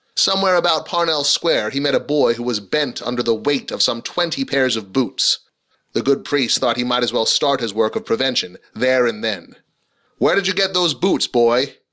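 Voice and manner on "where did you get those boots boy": stern, demanding tone, pitched up. A priest stops a boy carrying boots and demands, in stern tones. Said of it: "he demanded in stern tones".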